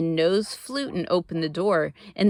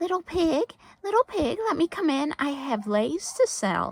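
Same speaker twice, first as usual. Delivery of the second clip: very high, sugary, sweet, fake-nice voice; 9 semitones higher, 3 dB quieter than usual. Reading a story; the magic shark, pretending to be a lace seller, calling sweetly. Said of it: "called sweetly".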